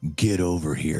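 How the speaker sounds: very deep, low, deep-throated call. Echoing a woman calling another girl over, Mortal Kombat 'Get over here' voice. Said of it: "That is as deep as her voice".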